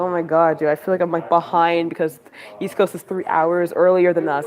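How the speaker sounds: ordinary talk, nothing marked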